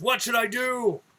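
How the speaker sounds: put-on, high, mild half-shouted yell. Voicing Tola in the arena asking the crowd: screaming. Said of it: "you can hear him screaming. He goes".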